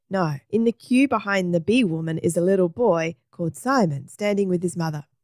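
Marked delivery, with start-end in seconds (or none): none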